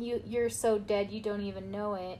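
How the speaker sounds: ordinary talk, nothing marked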